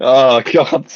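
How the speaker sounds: words breaking up into helpless laughter. Reacting to a joke being retold, laughing while talking. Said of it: "I can't stop laughing, sorry".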